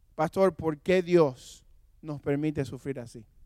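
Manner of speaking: usual speaking voice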